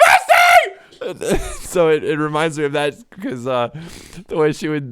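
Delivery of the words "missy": very high, sing-song, swooping shouted call. Imitating his grandmother calling the cat: imitating Mary Beeson's yell. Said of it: "She would just yell the cat's name".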